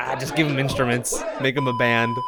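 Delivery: ordinary delivery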